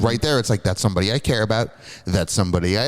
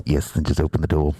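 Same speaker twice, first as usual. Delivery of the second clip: put-on alien monster voice, lower pitch; 7 semitones lower than usual. Voicing the xenomorph's inner monologue: xenomorph inner monologue voice. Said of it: "The inner monologue".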